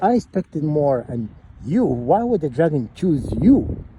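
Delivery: condescending, belittling, talking-down tone. Retelling a movie character talking down to another character: mimicking a condescending tone. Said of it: "condescending tone".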